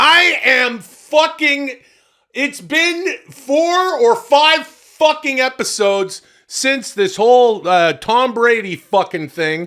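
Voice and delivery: slow, loud, high-pitched yell. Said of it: "Why am I yelling?".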